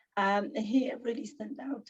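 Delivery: croaky, strained sore-throat voice, half-whispered.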